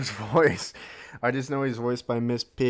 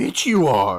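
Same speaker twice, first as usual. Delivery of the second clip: loud, mean, bullying character voice; 3 semitones lower, 8 dB louder than usual. Coloring in a drawing of Yoda and speaking as him: Yoda voice. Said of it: "Imagine being bullied by Yoda".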